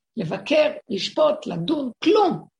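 rising to a shout.

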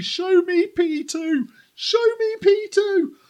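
very high, shrill, insistent, drawn-out screaming. Retelling watching a race finish at a desk, imitating own screaming at the tv. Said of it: "I was sat here at my desk screaming at the T V".

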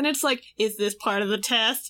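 normal talking voice

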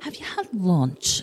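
put-on thick Northern English accent. Retelling someone's question about lunch: imitating Simona's thick Northern accent. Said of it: "she's this very thick Northerners accent".

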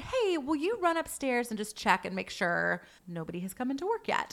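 ordinary talk

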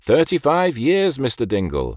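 loud, high-pitched, patronizing, condescending voice. The doctor turns to Mr. Dingle and addresses him, loud and condescending. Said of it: "he said in a loud, condescending voice".

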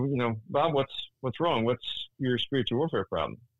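ordinary talk

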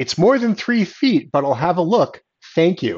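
super sarcastic, swooping, dismissive official-sounding tone. Retelling FIA radio answering a Mercedes complaint, mock-sarcastic Michael Masi. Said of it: "just the super sarcastic".

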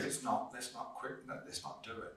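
ordinary delivery

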